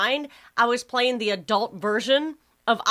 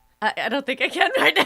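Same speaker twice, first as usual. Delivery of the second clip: talking through giggles; 3 semitones higher than usual. Asked to say something a certain way, answering while giggling. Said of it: "I can't stop giggling".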